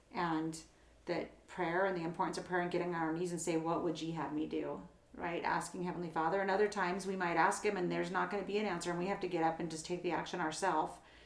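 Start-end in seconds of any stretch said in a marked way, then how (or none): none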